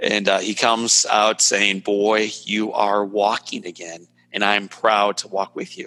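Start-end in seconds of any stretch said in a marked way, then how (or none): none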